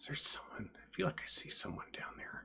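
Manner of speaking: hushed, whispered muttering under the breath. Voicing a man leaning over the canyon edge to look south, muttering under his breath. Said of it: "muttering under his breath".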